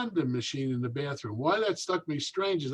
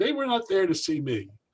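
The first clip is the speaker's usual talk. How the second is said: ordinary delivery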